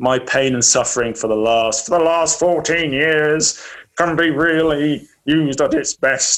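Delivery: put-on tired, worn-out, knackered old man voice.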